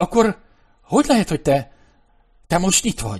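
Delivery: high-pitched, stuttering, halting, stammering speech. Abigail questions the mouse who had died, stammering. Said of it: "Dadogta Abigail".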